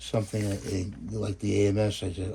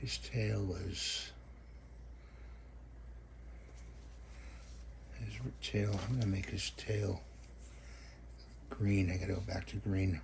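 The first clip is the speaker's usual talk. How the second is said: mumbling under breath, much quieter; 10 dB quieter than usual. Speaker paints and picks colours aloud as he works, mumbling to himself. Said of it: "I'm mumbling to myself here".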